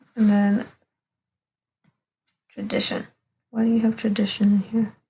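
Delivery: soft, hushed whisper. Reading tarot cards for someone, whispering. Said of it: "I'm like whispering".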